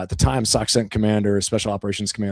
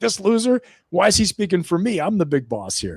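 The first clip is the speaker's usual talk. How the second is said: very high, swooping, jeering mock voice; 9 semitones higher than usual. Retelling how a commander makes fun of another leader: imitating someone mocking. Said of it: "makes fun of him".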